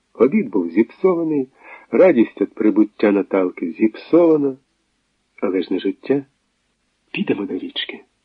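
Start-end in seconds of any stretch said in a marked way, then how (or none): 7.1-8.0 soft, hushed whisper. Reading a novel, a woman speaks to him as they leave the dining room: whispered. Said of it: "шепнула йому Наталка".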